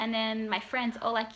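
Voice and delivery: ordinary talk, nothing marked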